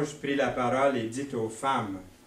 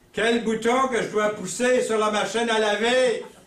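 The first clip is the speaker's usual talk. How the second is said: mock high, hollered shouting across a distance; 8 semitones higher, 4 dB louder than usual. Telling a joke where a husband calls to his wife: imitating a husband shouting. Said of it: "Puis il crie à sa femme".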